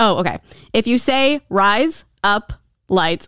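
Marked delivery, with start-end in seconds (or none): 1.5-3.2 very slow, every word stretched and drawn out. Saying a phrase so the listener can catch on, very slow. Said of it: "I'm saying it really slow".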